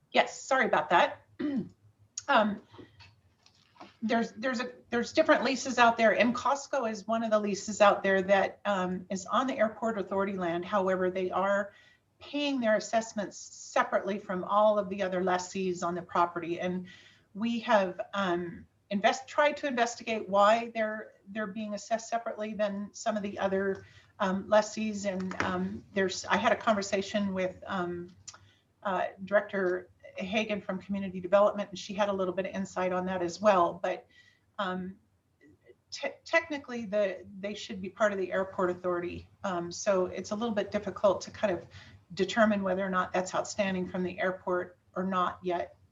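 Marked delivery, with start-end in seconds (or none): 0.2-8.6 speaking up, louder. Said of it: "Would you speak up, please?".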